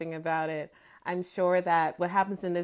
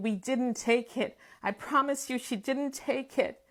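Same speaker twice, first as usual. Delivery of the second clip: sobbing, bawling, crying voice; 6 semitones higher than usual. Retelling pleading for the sister during a beating: retelling own crying plea. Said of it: "crying and bawling and saying".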